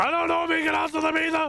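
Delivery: yelling, shouting. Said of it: "why are we yelling?".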